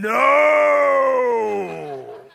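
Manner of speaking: very loud, rough, drawn-out demonic roar. Retelling a kid's reaction when his father took one of his fries, in a demonic voice. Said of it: "a demonic voice".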